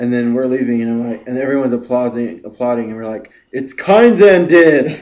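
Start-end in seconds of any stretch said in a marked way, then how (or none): 3.5-5.0 very loud, high-pitched yelling shout. Retelling how they yelled while leaving as everyone applauded, retelling a loud shout. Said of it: "Hecka loud".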